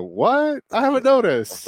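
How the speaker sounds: very high, swooping, sarcastic, feigned surprise. Retelling own reply to a friend's remark: retelling a sarcastic reply. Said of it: "I just sarcastically go".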